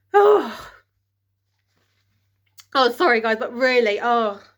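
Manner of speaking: choked up, crying, tearful speech. Telling listeners about their mom's test scare, crying while talking. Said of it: "I knew I was gonna freaking cry".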